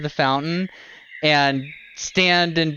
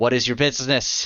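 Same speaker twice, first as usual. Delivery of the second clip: much lower voice, as if inside armor; 4 semitones lower than usual. A narrator voices someone inside a suit of armor challenging visitors, voice from inside armor. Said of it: "a voice emanates from inside one of them".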